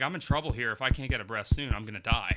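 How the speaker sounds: normal talking voice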